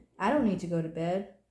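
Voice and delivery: ordinary delivery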